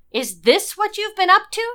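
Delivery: very high-pitched, swooping, demanding tone. Reading a headline about arrests, Natalia confronts Lara, demanding. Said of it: "she demanded".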